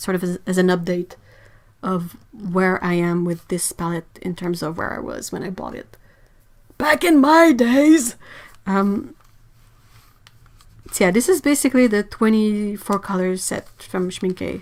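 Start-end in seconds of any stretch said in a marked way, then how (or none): 6.8-8.2 really bad put-on elderly voice, high, slow. Joking about the palette's early days: really bad old person voice. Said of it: "It's my really bad old person voice".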